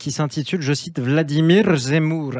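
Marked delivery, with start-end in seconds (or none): 1.0-2.3 put-on Russian accent. A speaker cites a hashtag from French-speaking Twitter, in a Russian accent. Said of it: "c'est avec euh, l'accent russe".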